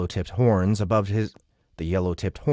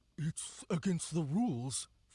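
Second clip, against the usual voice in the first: anxious, nervous, barely audible, very soft, pitched up; 8 semitones higher, 13 dB quieter than usual. Reading a fantasy story aloud, the narrator voices a character's line, nervous. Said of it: "Folk said nervously".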